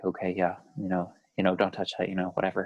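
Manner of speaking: low, fast, detached, droning monotone. Describing a frustrating show character, imitating his monotone talk. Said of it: "monotone guy".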